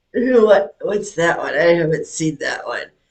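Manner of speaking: ordinary talk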